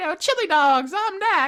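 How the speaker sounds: cute, tiny, very high-pitched little voice. Joking about a game mascot's expected voice, doing a cute little Knack voice. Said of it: "You think he has a cute little voice".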